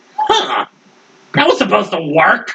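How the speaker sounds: high, swooping, sing-song put-on cartoon voice. Voicing the one watching through eye sockets: Krang-sounding voice. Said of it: "Krang sounding ass".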